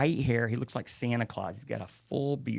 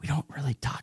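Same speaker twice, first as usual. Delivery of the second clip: put-on whisper, higher pitch; 3 semitones higher than usual. Retelling what the group's leader said about the trip: imitating someone whispering. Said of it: "he's, like, whispering".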